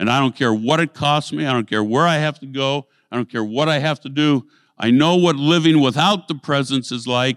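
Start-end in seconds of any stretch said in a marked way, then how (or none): none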